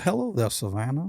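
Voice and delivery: creepy, ghostly, slow, genteel southern gentleman drawl. Describing a southern ghost hunter, imitating his southern accent. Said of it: "Southern, like".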